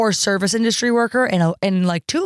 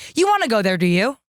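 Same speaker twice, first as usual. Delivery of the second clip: American accent with British inflection, transatlantic. Describing a mixed accent, demonstrating american accent with british inflection. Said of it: "American accent with British inflection".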